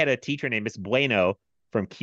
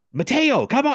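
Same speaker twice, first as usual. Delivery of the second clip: put-on, very high-pitched, pushy yelling; 14 semitones higher, 4 dB louder than usual. Retelling a Spanish teacher pushing a student to speak: imitating a teacher yelling. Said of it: "she's, like, yelling at me".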